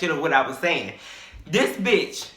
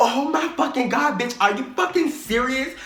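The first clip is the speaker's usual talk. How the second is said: mock gushing excitement, loud and high-pitched; 6 semitones higher than usual. Retelling a classmate's reaction to a secret: imitating someone loud and excited. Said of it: "she just loud as fuck".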